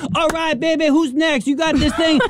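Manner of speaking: mock over-eager, high, excited screaming with hype. Describing the self-checkout worker at Target, the speaker quotes him, imitating excited screaming worker. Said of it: "a guy screaming in my face, excited about his job".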